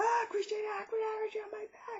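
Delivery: very high-pitched, panicked whisper.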